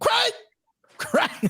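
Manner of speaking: very high, sing-song fatherly call, swinging up and down. Announcing a fighter's odds, then calling for Craig in the dad from Friday impression. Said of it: "that's that's my impression of the dad from Friday".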